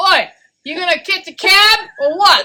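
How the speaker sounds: put-on New York accent with very high pitch. Taking turns doing voices for the others to guess, the speaker does a new york accent. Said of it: "New York".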